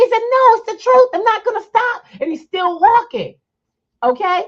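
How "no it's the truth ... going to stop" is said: high, loud shouted voice. Retelling the ranting man refusing to stop: imitating a man shouting back. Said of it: "he's screaming".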